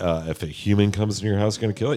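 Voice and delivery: normal talking voice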